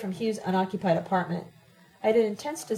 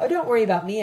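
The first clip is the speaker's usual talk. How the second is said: flippant, offhand, louder; 4 dB louder than usual. Reading a story, the narrator answers a woman's question; flippant. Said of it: "I said flippantly".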